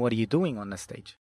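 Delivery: ordinary delivery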